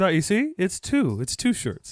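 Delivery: slow, sing-song, spelled-out careful delivery. Retelling how he explained the shirts to the dog: imitating him explaining to a dog. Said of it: "he was explaining to the dog".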